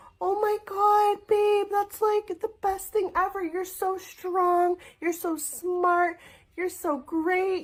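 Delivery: put-on overly sweet, very high, girly gushing voice. Showing how to overly compliment a partner: overly gushing praise. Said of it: "you overly go".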